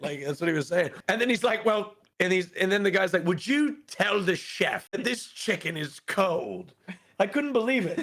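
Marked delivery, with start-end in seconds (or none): 3.3-6.7 slow, deliberate, put-on British accent. Retelling a diner complaining about cold chicken: imitating a British accent. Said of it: "saying that in the British accent".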